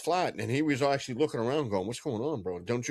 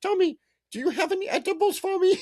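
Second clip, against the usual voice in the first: put-on old-lady voice, much higher; 4 dB louder than usual. Describing Tommy's elderly Peruvian mother asking him for edibles, imitating an old Peruvian lady. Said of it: "an eighty-something-year-old Peruvian lady".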